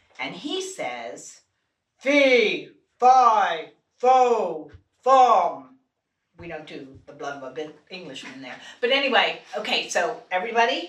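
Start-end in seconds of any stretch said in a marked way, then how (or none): 2.0-5.8 booming, very slow, drawn-out fearless giant voice. Teaching listeners to use the diaphragm, saying the giant's line in a deep fearless giant voice. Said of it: "the giant has a deep voice and he's fearless".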